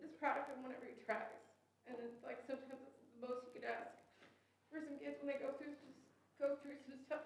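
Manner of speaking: emotional, rushed outpouring. A speaker praising a student named Bryson, getting emotional. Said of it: "I'm sorry, I'm being emotional".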